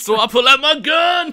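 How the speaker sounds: shrill, very loud, high shout. Joking about being trapped in a closet, shouting. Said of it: "Probably not the best thing to shout".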